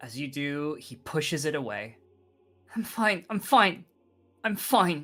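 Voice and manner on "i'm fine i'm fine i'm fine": raised voice, forced through clenched teeth. Pushing away an offered hand, through gritted teeth. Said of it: "he says through gritted teeth".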